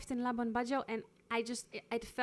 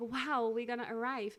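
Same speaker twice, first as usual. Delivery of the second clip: ordinary talk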